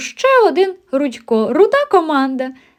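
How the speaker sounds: high, sudden, exclaimed outburst. A wolf cub at school greets a ginger newcomer, exclaiming. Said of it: "вигукнув вовчик Вовченко".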